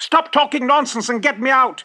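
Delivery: loud, high-pitched, demanding shout. Stuck in a tree, the fox demands the laughing weasel's help, shouting. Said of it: "shouted the fox".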